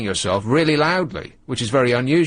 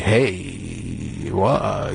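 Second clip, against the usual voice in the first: low, deep, rich voice, self-absorbed; 6 semitones lower than usual. Mocking how people sound when lost in their own voice in headphones, imitating a deep, rich voice. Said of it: "this is why they all sound like".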